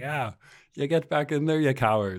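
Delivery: high, jeering, scornful, mocking tone. Retelling how a man taunted chimps walking back in, retelling a mocking taunt. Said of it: "mocking them like that".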